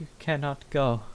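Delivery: grieving, sorrowful voice. Voicing an unseen voice echoing through a cathedral, sorrowful voice. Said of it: "sounds sorrowful".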